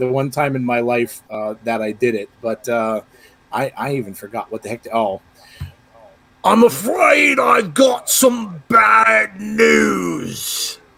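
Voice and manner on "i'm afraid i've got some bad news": put-on British accent, very slowly drawn out. Showing the British accent from his story, British accent. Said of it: "British accent".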